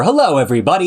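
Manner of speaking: over-the-top, exaggerated, big radio announcer voice. Showing the fake radio persona he avoids, exaggerated radio announcer voice. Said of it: "I don't have to be radio voice [name]".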